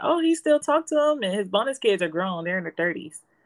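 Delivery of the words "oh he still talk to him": put-on high, loud child voice. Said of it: "And he's like".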